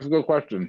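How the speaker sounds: talking with mouth full. Asked when they decided to work with youth, talking with mouth full. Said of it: "Sorry for eating with food in my mouth".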